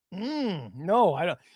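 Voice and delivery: ordinary talk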